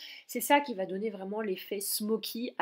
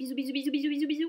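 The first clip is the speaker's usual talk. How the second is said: rushed and high, rattled off at top speed; 6 semitones higher than usual. Having forgotten to film the video's ending, she signs off to viewers: very fast goodbye. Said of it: "Je vous dis au revoir à toute vitesse".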